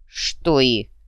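on guard. De Coulier cuts into Nelson's demand, wary. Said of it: "насторожился де Кулье".

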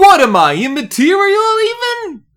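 put-on, thick New York accent, loud and high-pitched. Trying a bit again after losing the voice, do a put-on New York accent. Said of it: "I'm doing a New York accent".

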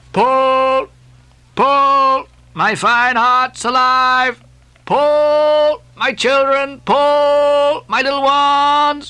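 very slow, lulling drawl. Speaking to his uneasy crew, drawling and soothing. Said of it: "Drawlingly and soothingly".

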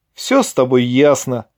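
dismissive, scornful, contemptuous sneer in the voice. Ilya answers Vovka, then turns toward the club, with a contemptuous smirk. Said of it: "презрительно усмехнулся Илья".

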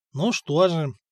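ordinary delivery

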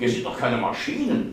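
plain reading voice

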